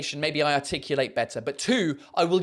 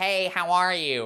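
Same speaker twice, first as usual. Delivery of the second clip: put-on American accent, spoken through the nose. Comparing accents, the speaker demonstrates how Americans sound: nasal American accent. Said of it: "the American accent is a bit nasally as well".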